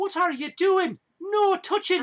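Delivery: put-on Irish accent. Voicing a woman in the game in an irish accent. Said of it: "I can do the Irish accent".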